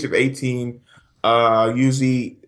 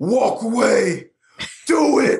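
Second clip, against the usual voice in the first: put-on intense motivational yelling, higher pitch; 10 semitones higher than usual. Joking about channeling inner Shia LaBeouf: Shia LaBeouf impression. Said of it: "channel your inner Shia LaBeouf".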